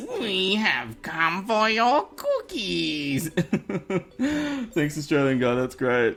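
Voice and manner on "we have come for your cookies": sing-song alien visitor voice. Reading out a viewer's request, a line in a put-on Martian voice. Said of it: "in a Martian's voice".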